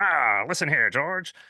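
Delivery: put-on old-timey 1930s cartoon villain voice. Imagining studio executives' conversation, voicing an exec like a 1930s cartoon villain. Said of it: "like a nineteen thirties cartoon villain".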